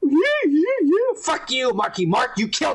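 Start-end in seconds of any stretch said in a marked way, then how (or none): 0.0-1.2 very high-pitched, jeering put-on voice. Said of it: "This guy talks like this and shit".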